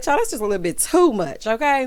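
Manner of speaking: plain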